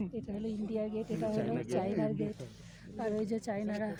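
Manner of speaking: soft, hushed, quiet delivery.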